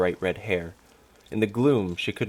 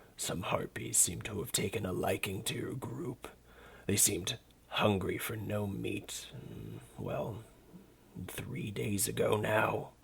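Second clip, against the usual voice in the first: put-on weary, soft, annoyed old dragon voice; 2 semitones higher, 9 dB quieter than usual. Reading a story, the dragon tells the gnome about the harpies: low, rumbling dragon voice. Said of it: ""I'm a dragon. A very old, very annoyed dragon." / He ignored her invitation. / A very old, / Its low voice rumbled throughout what appeared to be a dank".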